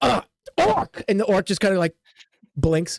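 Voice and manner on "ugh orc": angry shout, higher. Voicing an injured character who angrily calls the orc over: angry shout at the orc. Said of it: "he just says anger".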